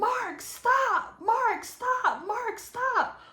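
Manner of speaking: mock, very high, loud, drawn-out, repeated scream. Speaker retelling what he overheard during a scuffle, imitating a woman screaming. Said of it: "I just hear her screaming".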